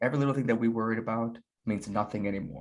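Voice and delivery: ordinary talk, nothing marked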